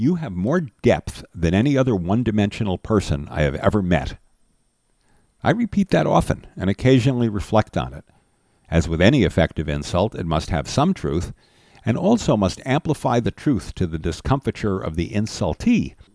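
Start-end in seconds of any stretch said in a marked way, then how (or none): none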